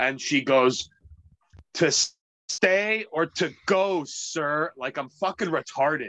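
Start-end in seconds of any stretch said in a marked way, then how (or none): 1.7-4.7 very slow, condescending, talking-down tone. Retelling a woman's reply to the speaker's coffee order, imitating a condescending tone. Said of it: "it was this very condescending tone".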